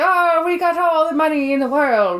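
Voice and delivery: put-on drunken Irish accent. Retelling a film scene, imitating a drunken Irishman coming home. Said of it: "caricature of a drunken Irishman".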